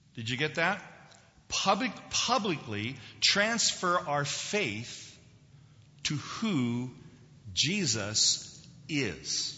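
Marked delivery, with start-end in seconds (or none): 1.5-9.6 publicly repeated, stressed hard and drawn out. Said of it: "I underline the word publicly".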